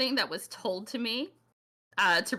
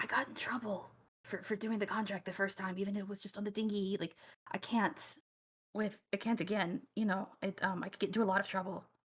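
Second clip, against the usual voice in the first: voice drops, conspiratorial, much quieter; 7 dB quieter than usual. In a role-play negotiation, the speaker's character drops to a conspiratorial voice. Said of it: "my voice drops, and I like lean in a little conspiratorially".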